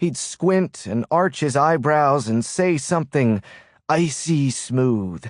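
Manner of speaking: ordinary delivery, nothing marked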